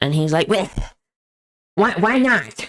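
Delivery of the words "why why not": put-on cartoon kid voice, higher, slower. Retelling telling Grandpa not to eat Fritos, quoting his reply in an Eric Cartman voice. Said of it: "he kind of talks like Eric Cartman".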